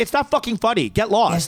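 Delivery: put-on pissed-off scolding voice. Retelling how Mike snapped at a harasser: imitating Mike getting pissed. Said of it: "Mike finally gets so pissed".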